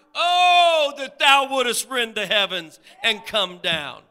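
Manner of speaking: very loud, high, heartfelt pleading cry, long drawn-out "oh". Explaining a scripture verse, acting out its speaker crying out in a pleading cry. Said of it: "crying out from the depths of his heart".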